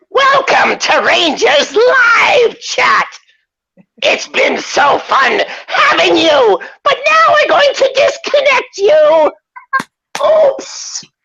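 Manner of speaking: very high, very slow character voice. Performing a show sign-off on request: the fax voice. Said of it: "can you say Rangers Live Chat in the fax voice".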